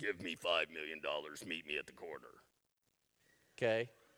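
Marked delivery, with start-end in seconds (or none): 0.0-2.3 spooky Halloween voice, very low and very quiet. Act out a caller demanding ransom over the phone, in a Halloween voice. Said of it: "Halloween voice".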